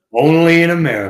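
very loud, shrill, high, badly belted out. Giving a hint about a guest: really bad Don King impersonation. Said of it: "that was a really bad Don King impersonation".

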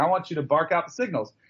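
ordinary talk, nothing marked

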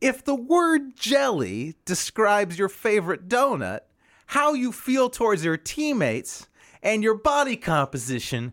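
swooping high put-on voice. After asking if everyone is ready, joke about Carmelo Anthony in a Jeff Foxworthy impression. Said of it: "This is Jeff Foxworthy on Carmelo Anthony".

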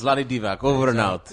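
put-on Serbian accent. Signing off in an imitation: Vlade Divac accent. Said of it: "I do the accent".

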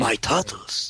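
put-on old rat master voice. Chatting with others about the movie, Splinter voice. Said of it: "[name], the master of voices".

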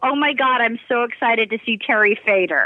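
ordinary talk, nothing marked

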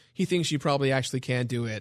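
ordinary talk

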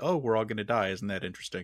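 ordinary talk

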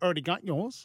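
casual, put-on New Zealand accent. Retelling what a woman said about a present, put-on New Zealand accent. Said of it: "That's my New Zealand accent impersonation".

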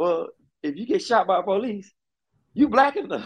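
high, full of disgust. Retelling a scene from an episode, imitating Kevin Samuels, disgusted.

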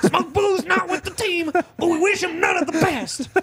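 very high-pitched, aggressive voice. Talking with a co-host, the speaker shows how Jimbo talks: Jimbo impression, high and mock-aggressive. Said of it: "much higher pitch. And it's all a little aggressive like this".

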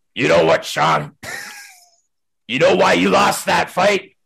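creaky, rough, raspy, high voice with swooping pitch. Retelling what the coach said after the game: Larry Mavety impression. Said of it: "I'm gonna do my best Larry Mavety impression".

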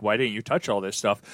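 ordinary talk

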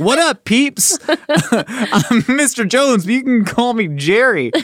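high, drawn-out, try-hard fake cool voice. Pretending to greet an eighth grade class: put-on substitute teacher trying to sound cool. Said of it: "you sound like a substitute teacher trying to sound cool".

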